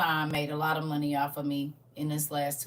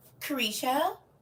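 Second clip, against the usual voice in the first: playful shouting, higher; 11 semitones higher than usual. Greeting a viewer in chat, yelling a name like an embarrassing cousin. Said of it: "I'm yelling it like I'm your cousin".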